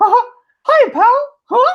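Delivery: squeaky high-pitched voice. Retelling a chat message, the speaker voices Mickey answering: Mickey Mouse impression. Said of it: "hopefully that was a good Mickey impression".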